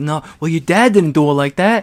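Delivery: very loud, somewhat high-pitched voice. Retelling a movie scene where a character scolds her practicing: Mark Wahlberg impression.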